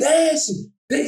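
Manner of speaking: mock high, shouted sideline coach yelling. Retelling how the coach yelled from the sideline: imitating a coach yelling. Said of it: "dele gritando".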